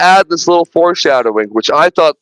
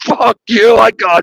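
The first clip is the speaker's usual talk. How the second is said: very slow, drawn-out, defiant, acted taunting jeer; 5 semitones higher than usual. Recounting a scene where a man yells taunts at a thing, retelling a yelled taunt. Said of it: "literally yelling like like the best taunts".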